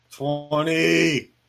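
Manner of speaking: very loud, high, stretched-out angry shout. Answering which number the list is on: angry. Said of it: "You sound angry".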